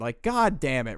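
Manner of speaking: usual speaking voice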